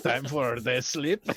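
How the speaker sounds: put-on very loud, high-pitched blended French-Russian accent. Playing a character in a scene, [name]'s French-Russian accent. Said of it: "French Russian accent".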